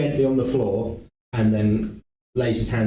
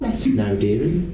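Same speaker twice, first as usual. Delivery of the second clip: put-on motherly, matronly caretaker voice. Voicing a character who sounds like a matronly woman: matronly child-caring woman voice. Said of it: "in the voice of a. Sounds like a like a, a a matronly kind of like child caring woman".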